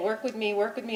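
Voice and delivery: ordinary talk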